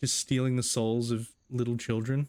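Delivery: ordinary delivery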